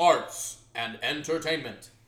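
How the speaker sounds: slow, drawn-out announcer voice. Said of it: "arts and entertainment repeated".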